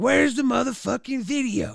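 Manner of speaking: play-acted furious, angry father voice. Retelling what their dad said on their return home, imitating an angry dad. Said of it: "He was pissed".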